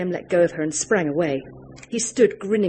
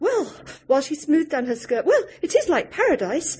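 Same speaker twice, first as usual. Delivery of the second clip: chattering away, much higher pitch; 10 semitones higher than usual. Graham's mother, greeting someone, talks on about the place, chattering.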